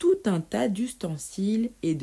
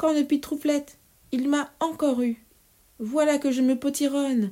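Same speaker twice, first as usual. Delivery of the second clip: muffled moan; 8 semitones higher, 3 dB louder than usual. The witch Cornebidouille, shrinking after tasting her soup, moaning in a stifled cry. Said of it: "gémit la sorcière dans un cri étouffé".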